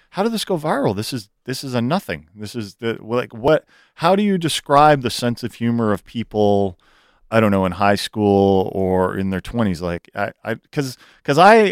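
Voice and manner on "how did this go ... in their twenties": ordinary delivery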